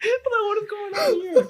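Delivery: squeaky, high squeal through laughter, sounding disbelieving.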